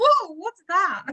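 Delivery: high, loud startled whoa. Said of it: "be like".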